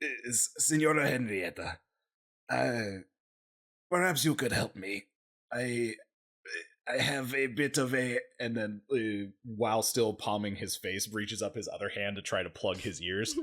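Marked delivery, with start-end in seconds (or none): 0.0-8.2 hoarse voice with throat-clearing. Voicing Eduardo asking the brothel madam for help: frog in his throat. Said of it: "with just kind of a, a frog in his throat".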